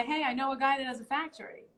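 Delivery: normal talking voice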